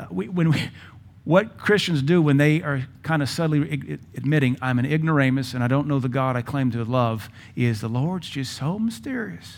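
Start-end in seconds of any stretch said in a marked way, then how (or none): 7.5-9.6 soft, dopey-sounding put-on Southern accent. Quoting what some Christians say about God's ways: put-on Southern accent. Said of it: "we purposely put the Southern accent on there".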